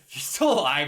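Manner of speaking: high, loud blurt with a laugh. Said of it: "I, I said that weird".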